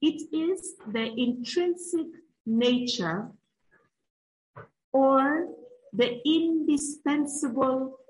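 unhurried word-by-word reading. Speaker reads out the dictionary meaning of essence to listeners, reading slowly. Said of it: "I'll read it slowly".

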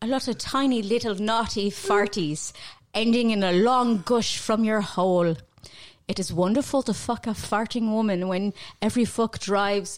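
put-on Irish brogue. Reading aloud a letter handed over, in an Irish accent. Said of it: "I was reading it with an Irish accent and everything".

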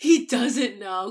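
shocked gasp, slow and loud realization.

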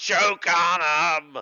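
loud, drawn-out dying scream. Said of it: "he screams".

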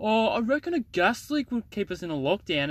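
self-assured, high-pitched call. Recounting a lockdown discussion, imitating Chompers raising his voice. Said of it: "Chompers just raised his voice".

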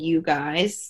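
plain

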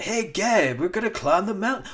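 put-on surfer voice. Retelling the characters calling out to Gabe: Point Break voice. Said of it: "give them their proper Point Break voices".

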